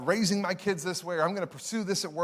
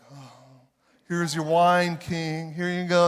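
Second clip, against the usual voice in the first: mock sorrow, heavily hammed-up, exaggerated sadness; 6 dB louder than usual. Speaker acts out Nehemiah before the king, Nehemiah laying on mock sadness. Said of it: "he's really laying it on thick".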